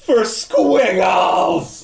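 full-throated, very loud, high yelling wail. Tossing a woman backwards over the shoulder in a game scene, yelling wail. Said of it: "I just yell and wail".

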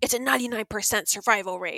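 indignant, offended tone. Retelling what a twenty-year-old said when asked to wear his mask: imitating an indignant reply. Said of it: "he was so indignant".

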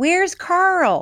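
high, sudden, reflexive, play-acted blurted yell. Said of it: "I yelled".

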